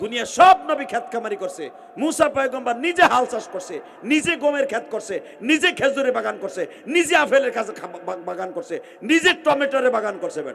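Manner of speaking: fervent, loud, high preaching shout.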